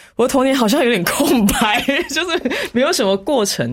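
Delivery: high-pitched voice, laughing through words.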